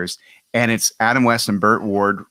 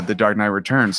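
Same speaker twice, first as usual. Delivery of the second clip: ordinary talk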